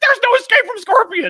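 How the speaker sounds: piercing screech at full blast, very high, shrill. Retelling a video game moment: imitating Scorpion screaming. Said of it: "Scorpion screams at his opponent".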